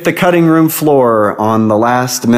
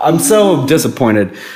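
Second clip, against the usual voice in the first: usual speaking voice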